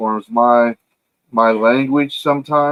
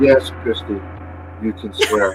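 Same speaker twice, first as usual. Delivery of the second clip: low, soft, gentle mocking tone. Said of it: "You're mocking me".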